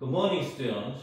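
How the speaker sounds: very slow demonstration reading.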